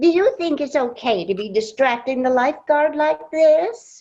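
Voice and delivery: high, sugary-sweet, syrupy polite voice. Retelling how Mindy spoke up at the pool, in her very sweet Mindy voice. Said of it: "In her very sweet Mindy voice".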